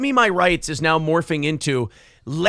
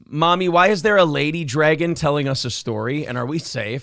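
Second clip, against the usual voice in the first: ordinary delivery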